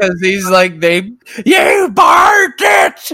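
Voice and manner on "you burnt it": play-acted screaming, pitched very high. Acting out how he treats people who are cooking on the show, imitating a man screaming at cooks. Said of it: "he's like screaming at people who are cooking".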